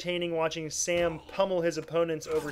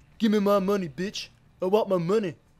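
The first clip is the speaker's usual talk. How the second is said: voiced like a cartoon character; 2 semitones higher than usual. Joking about interrogating people in co-op, Stewie voice from Family Guy. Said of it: "my Stewie impression from Family Guy".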